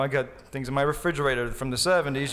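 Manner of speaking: ordinary talk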